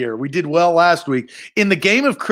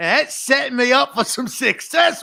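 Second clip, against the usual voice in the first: pitched-up put-on Australian accent; 9 semitones higher than usual. Asked how Nate talks, answering in Nate's Australian accent. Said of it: "He talks like this, ... I get set up for for uh for a good good Australian".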